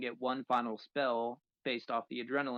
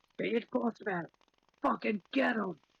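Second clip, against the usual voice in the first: very high-pitched, shrill bandit yell; 9 semitones higher than usual. Narrating a fight, the speaker voices a bandit yelling to its boss: bandit yelling. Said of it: "that bandit is going to yell".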